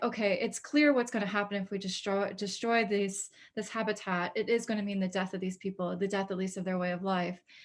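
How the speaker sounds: plain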